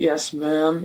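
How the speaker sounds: put-on flat monotone. Describing a police officer he met, imitating the cop's monotone. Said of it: "like monotone".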